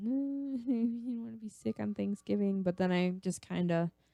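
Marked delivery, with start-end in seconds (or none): 0.0-2.6 put-on whiny voice, higher in pitch. Retelling own earlier complaint about being sick: imitating own whiny self. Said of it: "I was all, like, whiny and".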